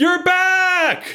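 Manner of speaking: very high excited scream, end drawn out. Narrating a scene, voicing a character greeting someone's return: screaming. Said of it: "and she screams".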